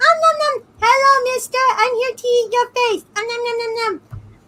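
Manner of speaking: tiny, very high, cute monster voice. Imagining becoming a meat monster, in a cute tiny monster voice. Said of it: "with cute tiny voice and just go".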